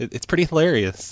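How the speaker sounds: speaking through laughter. Bringing up a story about a prank call, laughing. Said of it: "Why are you laughing?".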